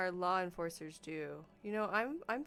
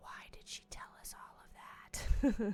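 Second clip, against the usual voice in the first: hushed whisper under the breath; 3 semitones higher than usual. Following a direction to say it hushed, a speaker asks a partner in a hushed voice. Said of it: "Say in a hushed voice".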